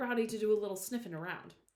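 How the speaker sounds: plain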